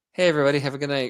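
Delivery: put-on placid, mellowed-out, easy, sedated calm voice. Imagining a sign-off where the meds worked as a sedative: imitating a sedated man. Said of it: "he was just like".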